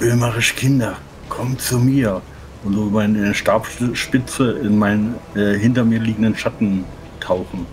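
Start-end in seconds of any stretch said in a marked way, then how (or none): 0.0-2.2 hushed whisper under the breath. A player speaks the character's spell command in the first combat round: whispered. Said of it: "Ich flüstere".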